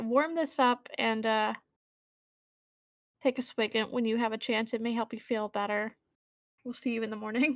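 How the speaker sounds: ordinary talk, nothing marked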